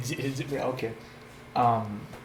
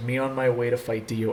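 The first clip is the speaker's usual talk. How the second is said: ordinary talk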